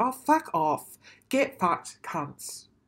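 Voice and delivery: slow, dragged-out, really aggressive outburst. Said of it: "I'm really aggressive".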